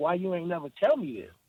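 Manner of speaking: put-on crying, tearful voice. Retelling how his mom reacted when he told her: imitating his crying mother. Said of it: "she started crying".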